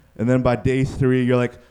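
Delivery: ordinary delivery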